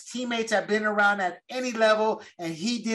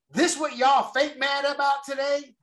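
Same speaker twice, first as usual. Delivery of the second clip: put-on American vernacular accent across the whole line; 5 semitones higher than usual.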